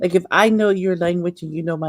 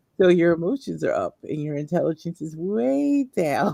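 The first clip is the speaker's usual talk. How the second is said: dry, swooping sarcastic voice; 3 dB quieter than usual. Showing what the speaker will say when something happens: sarcastic voice. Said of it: "I hear it in my sarcastic voice".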